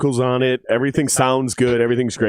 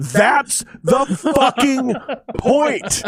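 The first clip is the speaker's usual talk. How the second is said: acted, shrill, very high yelling; 12 semitones higher than usual. Recounting to someone the phone call they had together, retelling a yell. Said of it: "I yelled into the phone".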